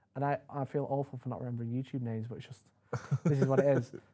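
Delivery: plain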